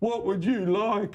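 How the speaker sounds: put-on impaired-sounding voice at a high pitch. Retelling how his mate spoke to customer service for his brother, in a put-on mentally challenged voice. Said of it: "put on a mentally challenged voice and go".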